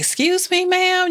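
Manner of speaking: put-on very high hollered call. Telling a listener about a man running out of the library, imitating a man hollering. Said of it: "he was like hollering".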